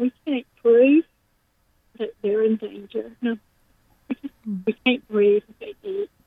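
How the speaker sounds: tearful speech, weeping while talking. Talking about the children, crying. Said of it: "I'm sorry for crying".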